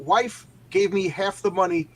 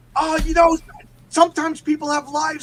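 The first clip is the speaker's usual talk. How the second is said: very high, loud, raised, shrill yelling; 11 semitones higher, 5 dB louder than usual. Retelling what the information lady said to him: imitating someone yelling. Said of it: "she just yelled at me".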